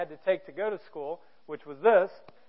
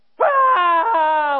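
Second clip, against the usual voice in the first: sudden loud, high, panicked wail. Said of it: "like that".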